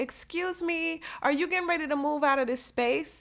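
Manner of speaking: put-on sweet, courteous tone. Retelling a story, quoting a young lady who pulls up, in a mock sweet, polite voice. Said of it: "in a really sweet, polite voice".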